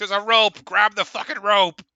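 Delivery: shrill, very high, very loud yelling. Voicing a character in the dark calling out about a rope: yelling. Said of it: "she starts yelling".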